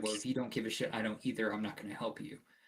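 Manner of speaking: mock snide, sarcastic, dismissive brush-off tone. Voicing a young priest refusing to help a visitor: sarcastic, unprofessional priest. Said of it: "he was very sarcastic with you".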